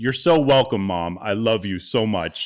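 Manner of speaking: said really loudly. Retelling a remark the speaker made to Mom so she could hear, really loudly. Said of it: "And I said really loudly".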